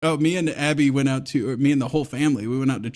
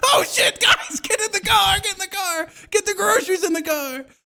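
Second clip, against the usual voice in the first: mock woman freaking out, very high, frantic. Podcast speaker acting out a woman reacting to a homeless man, imitating a woman freaking out. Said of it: "women are freaking out".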